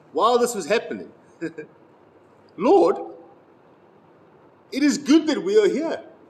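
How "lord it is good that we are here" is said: very high voice, bursting with excitement. Reading the scripture where Peter speaks to Jesus, excited. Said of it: "you can hear the excitement in Peter's voice".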